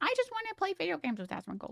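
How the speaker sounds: very high, squeaky, swooping sing-song voice. Quoting someone mockingly, then admitting it was mean: imitating Paris Harper's voice. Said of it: "I'm using his real voice".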